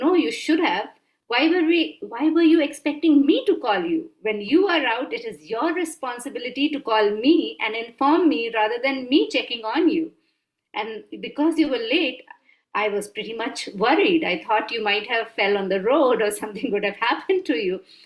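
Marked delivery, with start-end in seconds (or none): none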